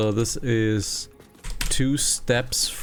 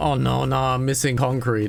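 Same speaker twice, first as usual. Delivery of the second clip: very strong French accent; 2 semitones higher than usual. Talking to a co-player during a game, in a very french accent. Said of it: "You said that in a very French French accent".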